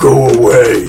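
deep, gruff-sounding voice. Game master voices an unseen figure speaking from inside, deep gruff voice. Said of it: "you hear a deep, gruff voice saying".

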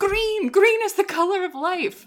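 very high, shrill yell. Describing a Tomb Raider scene where a character faces a riddle, retelling a yell. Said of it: "she ends up yelling".

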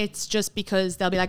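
ordinary talk

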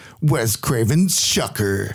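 movie trailer announcer voice. Announcing a film title, said in a movie trailer voice. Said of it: "I'm very impressed by your trailer voice".

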